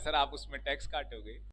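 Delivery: soft, sweet, loving tone.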